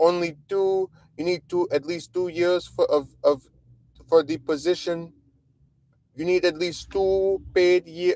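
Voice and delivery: dopey, mocking, high, silly little voice. Speaker mimics the woman on the phone, mocking her stupid voice. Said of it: "with a little stupid voice".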